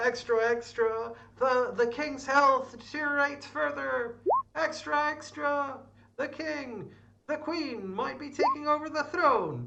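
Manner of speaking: put-on newspaper-boy shout. Describing a town scene and acting out a newspaper boy: imitating a newsboy shouting. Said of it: "someone shouting like".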